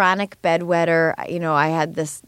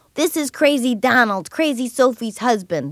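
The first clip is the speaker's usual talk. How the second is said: put-on thick Boston accent, pitched up; 6 semitones higher than usual. Imitate a man doing his own radio ads, in Crazy Donald's really thick Boston accent. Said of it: "he's got this really thick Boston accent".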